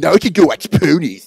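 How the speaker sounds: put-on nerdy voice with a lisp. Showing a voice used for a role: Robot Chicken nerd voice with heavy lisp. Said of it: "combination of the nerd from Robot Chicken with heavy lisp".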